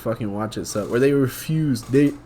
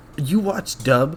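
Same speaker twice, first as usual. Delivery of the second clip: mocking, snobby, toxic-sounding put-on voice, higher pitch; 4 semitones higher than usual. Imitating a toxic fan of subtitled anime: imitating a toxic sub fan. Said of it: "the toxicity from the sub is like".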